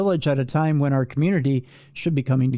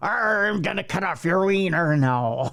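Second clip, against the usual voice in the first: mock pirate voice, pitched higher; 4 semitones higher than usual. Imitating the other speaker's only accent, a pirate. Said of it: "You're just like".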